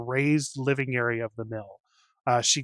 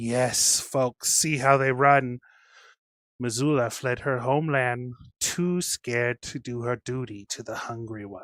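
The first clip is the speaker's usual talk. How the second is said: dissonant chorus of many voices. Narrating the rats streaming from the mill, voice this as a discordant chorus of voices. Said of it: "in a discordant chorus of voices".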